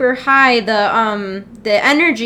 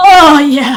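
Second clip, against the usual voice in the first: louder put-on moan of a pleased horse; 3 semitones higher, 9 dB louder than usual. Describing a cartoon horse race scene, imitating a pleased horse moaning. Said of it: "and the horse is like".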